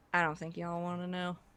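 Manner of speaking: put-on thick, heavy southern accent. A stranger answering a question, with a heavy southern accent. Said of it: "sort of heavy southern accent".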